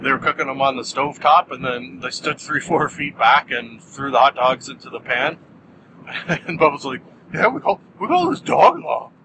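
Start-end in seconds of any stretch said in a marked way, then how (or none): 7.5-9.0 cartoon dog voice, much higher pitch. Retelling what Bubbles said, done as a Scooby-Doo voice. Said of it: "my Bubbles has turned into a Scooby-Doo impression".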